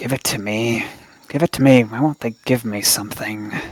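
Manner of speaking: murmured, muttered under the breath. A tarantula talking to itself, murmuring under its breath. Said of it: "like someone murmuring under their breath".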